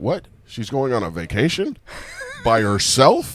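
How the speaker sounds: feigned, clueless-sounding surprise. Retelling a call with his grandmother, acting clueless: imitating his own feigned surprise. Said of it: "I played this time like I had no clue".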